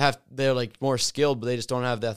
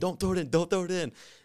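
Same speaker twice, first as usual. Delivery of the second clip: frantic, high, urgent yelled scream; 6 semitones higher than usual. Retelling a basketball game moment, quoting him: imitating someone screaming.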